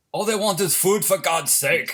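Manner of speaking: hopelessly bad put-on famous-person voice, belted out high. Doing an Arnold Schwarzenegger impression when asked. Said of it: "Let's hear your Arnold".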